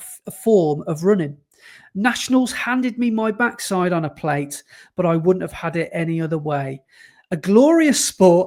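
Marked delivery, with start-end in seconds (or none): none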